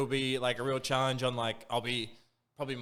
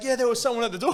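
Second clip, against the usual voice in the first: high-pitched, dead-certain, insistent yell; 11 semitones higher, 7 dB louder than usual. Retelling a roommate yelling after a night terror: imitating someone yelling. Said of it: "the other girl yells at her".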